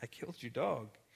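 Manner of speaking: acted tearful bawling, sobbing. Recalling phoning Becky while driving a truck north, retelling own bawling. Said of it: "I'm just bawling on the phone saying".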